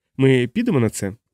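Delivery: plain reading voice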